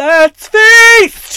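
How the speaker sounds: top-of-the-lungs yell, very loud and high. Retelling a date unpacking tacos at the table: imitating a shout at full volume. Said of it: "shouts at the top of his voice".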